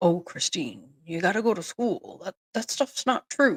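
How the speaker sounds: put-on goofy, swooping, fatherly funny dad voice. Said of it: "has that funny voice for her dad".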